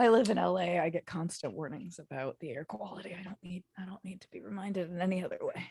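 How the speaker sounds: soft, hoarse, rasping voice. Talking in a group conversation, raspy voice. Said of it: "You just said that with a raspy voice too".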